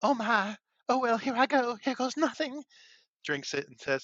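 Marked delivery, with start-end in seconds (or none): 0.0-2.6 put-on very high, loud valley-girl southern belle voice. Retelling a performer playing Juliet onstage: Juliet as Valley Girl-Southern Belle. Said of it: "playing Juliet as a half Valley Girl, half Southern Belle".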